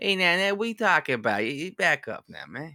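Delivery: put-on New York Italian accent. Joining a friend's talk on mafia voices, showing a new york italian accent. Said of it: "the New York Italian".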